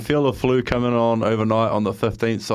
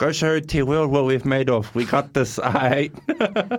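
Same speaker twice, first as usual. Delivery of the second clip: slow, little leprechaun-like voice; 4 semitones higher than usual. Imitating his dad reading a good-luck message: imitating his dad. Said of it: "if my dad did it, it'd be like".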